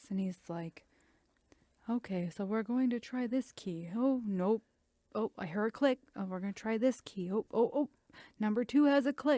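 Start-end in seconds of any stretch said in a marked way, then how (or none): 1.9-9.4 precise, dull, step-by-step running commentary. Imitating a lock-picking YouTuber who talks very precisely: imitating the Lock-picking lawyer. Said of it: "he talks like this".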